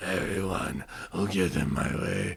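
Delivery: low, slow, gassed, out-of-breath voice. Describing Archer cutting a promo while blown up, winded Archer impression. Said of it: "he's blown up".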